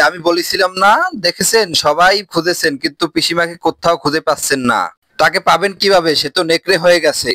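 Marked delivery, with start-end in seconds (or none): none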